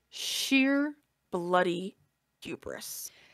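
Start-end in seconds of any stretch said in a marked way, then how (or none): 1.4-2.0 heavy stress on the word bloody. Remarking on someone's hubris in a story, stressing 'bloody'. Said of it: "Emphasis on bloody".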